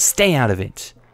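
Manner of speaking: cutting, sharp, snapping. Reading a story, voicing a mother telling a customer off: snapping at someone. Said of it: "She snaps at the customer".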